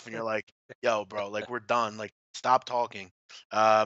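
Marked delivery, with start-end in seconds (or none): none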